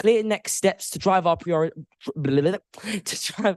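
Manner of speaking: stammering, word broken off and restarted. Speaker presenting to the council, tripping over a phrase: stuttering. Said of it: "I stutter".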